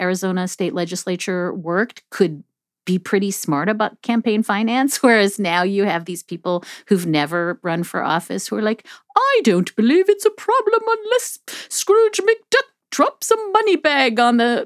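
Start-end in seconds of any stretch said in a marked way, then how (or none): 9.1-14.7 very high put-on posh upper-class British voice. Quoting first-time candidates on campaign finance, in a put-on posh British voice. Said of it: "that was a weird voice to do Scrooge McDuck. ... It was like Downton Abbey".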